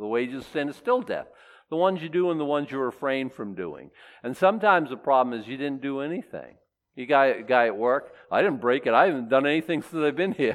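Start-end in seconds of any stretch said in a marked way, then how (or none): 8.3-10.5 mock, put-on boastful, bragging tone. A speaker mimics a guy at work bragging: imitating a bragging coworker. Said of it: "He's bragging".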